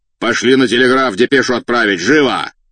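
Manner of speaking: impatient, demanding voice that brooks no delay. A cossack officer leans out and calls to an attendant, impatient loud shout. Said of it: "нетерпеливо тряхнув листком бумаги".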